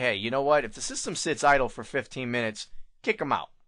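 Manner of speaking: usual speaking voice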